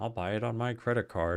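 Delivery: jokey, put-on American accent. Retelling what Windy keeps saying while the speaker teaches him: Windy's put-on American accent. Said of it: "he keeps doing his American accent".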